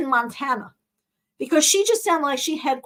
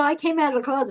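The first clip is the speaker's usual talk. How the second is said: ordinary talk, nothing marked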